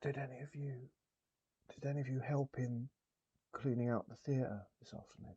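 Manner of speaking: whispering. A game master, in character, asks the players a question, whispering. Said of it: "I'll lower my voice to a whisper".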